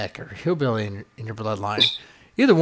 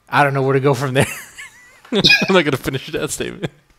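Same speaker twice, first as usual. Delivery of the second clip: ordinary talk, nothing marked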